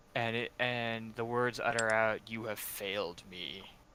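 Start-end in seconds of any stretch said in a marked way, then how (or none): 2.2-3.6 deep, dark, rumbling voice. Game master voicing a voice the players have never heard: dark rumbling voice. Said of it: "a dark voice that you've never".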